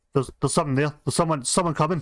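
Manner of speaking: hurried, rushed, scurrying goblin chatter. Describing what the players hear as they crest the stairs, hurried goblin voices. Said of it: "you hear hurried goblin voices going".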